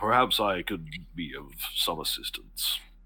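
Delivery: put-on low, older gentleman's voice. Storyteller voicing a man speaking from the back of the theater, as Herschel. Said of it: "a very familiar older man's voice is".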